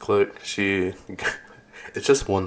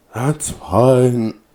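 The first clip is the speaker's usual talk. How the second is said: put-on drunk woman voice, higher, louder; 4 semitones higher, 7 dB louder than usual. Retelling what a woman said over the intercom, imitating a drunk woman. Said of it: "kind of drunk".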